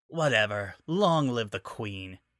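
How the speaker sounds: bored, uninterested, dismissive throwaway delivery. Narrator reading a character's reply from the crow's nest amid cheering, bored voice. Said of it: "Nightshade said in a bored voice".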